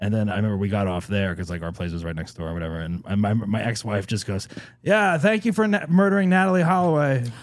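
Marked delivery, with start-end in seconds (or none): 4.8-7.2 put-on drunken yell, much higher. Retelling what his ex-wife yelled at a crowd at the Holiday Inn, retelling a drunk yell. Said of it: "She just yelled, like drunk, wasted".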